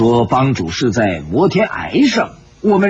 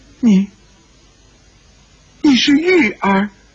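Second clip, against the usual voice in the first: quavering, trembling, very high cry; 10 semitones higher than usual. A character steps forward to question the young man, trembling voice. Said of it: "颤声说道".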